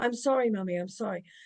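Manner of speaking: mock panicked, desperate pleading child voice. Recalling childhood, the speaker acts out their child self apologizing to mummy: imitating a panicked child pleading. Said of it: "just in desperate panic here".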